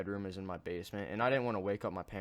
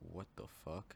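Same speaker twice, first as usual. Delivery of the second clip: imitated muttering under breath, quieter; 12 dB quieter than usual. Retelling own shocked reaction at a door: retelling saying it under breath. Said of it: "said very lightly under my breath".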